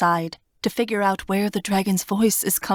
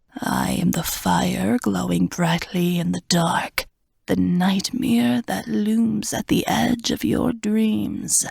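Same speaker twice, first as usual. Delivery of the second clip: rasping, rough, hissing dragon voice. Narrating a story, the reader voices a dragon speaking to the king: hissing dragon voice. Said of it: "the dragon hisses".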